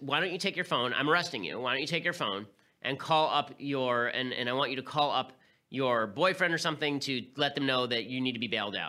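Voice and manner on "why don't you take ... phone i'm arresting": ordinary delivery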